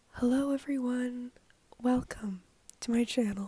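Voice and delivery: smooth, soothing, calm broadcaster voice. Channel host greets viewers at the start of the video, soothing radio voice. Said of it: "this soothing radio kind of voice".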